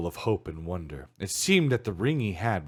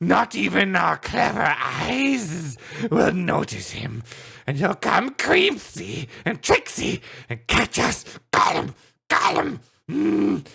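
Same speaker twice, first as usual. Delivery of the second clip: very high, creaky, weepy hissing creature voice, near tears; 10 semitones higher, 4 dB louder than usual. Reading Gollum arguing with himself, in a hissing Gollum voice. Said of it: "hissed [name]. / Suddenly [name] sat down and began to weep, / hissed [name]. / He seemed to be having an argument with himself. / Suddenly [name] sat down and began to weep".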